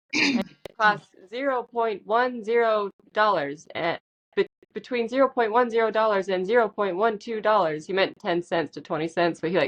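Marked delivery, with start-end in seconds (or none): 0.1-7.8 robotic machine voice. Imitating the guy in the AI-created video quoting prices, robot voice. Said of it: "robot voice".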